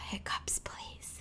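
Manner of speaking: very soft, whispered, pleading voice.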